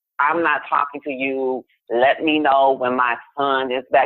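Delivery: ordinary delivery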